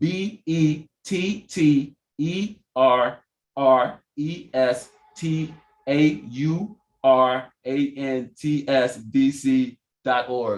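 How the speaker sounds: spelled out slowly, one letter at a time. Repeating the campaign website for the audience a little slower: spelled out slowly. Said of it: "I'm gonna say it again a little slower".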